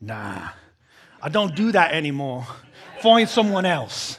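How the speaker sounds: put-on cool, gravelly British accent. Speaker retelling a movie scene, Jason's cool gravelly British accent. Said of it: "that cool, like, British gravelly accent".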